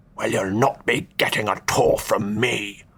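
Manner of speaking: hissed out through the teeth. Narrator reads the Duke speaking while returning a couple's wave, hissed through teeth. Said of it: "the Duke hissed through his teeth".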